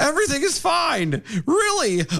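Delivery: voice jumping way up, very high. Reacting to a report on naval forces, in an unexpectedly high voice. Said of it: "I don't know why my voice is so high".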